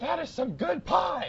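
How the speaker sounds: put-on very high, all-out top-of-lungs scream. Retelling a stranger's outburst about pie: imitating someone screaming. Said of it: "he's screaming at the top of his lungs".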